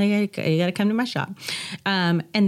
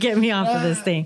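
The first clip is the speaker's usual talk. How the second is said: crying, tearful, frightened, begging voice. Retelling how she cried on a moving horse: imitating own past crying. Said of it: "I'm crying, like".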